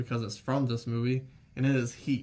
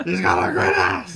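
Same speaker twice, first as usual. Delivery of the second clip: loud, sudden, blurted shout; 5 semitones higher, 10 dB louder than usual. Retelling Al Pacino's line in a serious scene: Al Pacino impression. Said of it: "what the fuck is that?".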